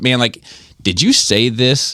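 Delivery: hurt, pained, let-down, disappointed tone. Retelling how he asked about the remark: imitating a pained, disappointed tone. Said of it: "in his tone, the pain, the disappointment".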